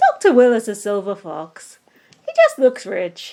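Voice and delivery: bad put-on Irish accent. Quoting what Enzo said, in a bad Irish accent as Enzo. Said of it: "We've got to do an Irish accent for Enzo".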